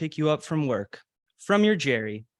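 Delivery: ordinary delivery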